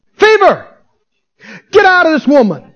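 firm, forceful, authoritative, commanding tone. Teaching how Jesus rebuked the fever, acting out Jesus's forceful rebuke. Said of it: "How did he rebuke it?".

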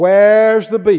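put-on loud old lady voice. Telling listeners to examine every message, quoting the drive-through lady in the Wendy's old lady voice. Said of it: "I say it like the old lady that used to drive through the Wendy's".

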